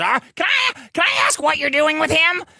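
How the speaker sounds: mocking high woman voice.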